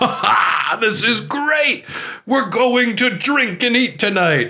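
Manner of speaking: put-on, very high, drawn-out laughing through words. Retelling the scene where Van Helsing finds out it is Dracula: imitating Van Helsing laughing. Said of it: "he's just laughing like".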